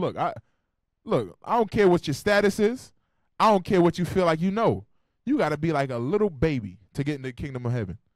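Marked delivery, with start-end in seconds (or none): none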